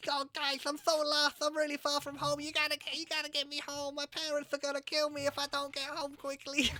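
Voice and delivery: very high, small-creature voice. In a role-play quest, a player speaks in character to the party: slightly high-pitched Bristletiff voice. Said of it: "you're a bit high pitched for".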